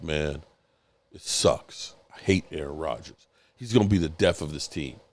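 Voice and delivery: very deep, dropped-down voice, low and soft. Retelling what a fan told him over the weekend, Richard impression, deep voice. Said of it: "Richard's got the deep voice".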